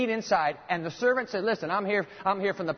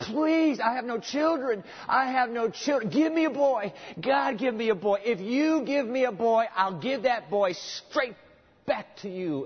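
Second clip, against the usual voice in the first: put-on desperate pleading, acted-out begging, higher pitch; 4 semitones higher than usual. Acting out a desperate housewife praying to God: imitating desperate pleading. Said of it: "pleading and cajoling and begging God".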